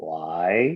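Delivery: mock super dry delivery. Retelling a coworker's reply on the phone, imitating a super dry voice. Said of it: "a super dry guy".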